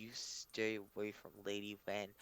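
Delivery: very quiet, very low, slow hiss. Voicing a character who air-kisses and warns in the ear: low hiss. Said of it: "just hisses it in your ear very low".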